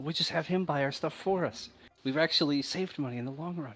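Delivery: whispered aside. Playing a character who leans in to another character, whisper the aside. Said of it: "He whispers to Dave".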